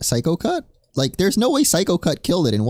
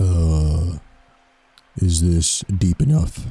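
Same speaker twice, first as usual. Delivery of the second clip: very low, forced, put-on deep voice; 12 semitones lower than usual. Answering a request to try talking deeper: deeper voice. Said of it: "Try talking deeper".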